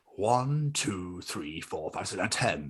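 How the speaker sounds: low cartoon tough-guy thug voice. Speaker listing his favourite Simpsons impressions: Snake impression. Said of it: "Snake is a favourite as well".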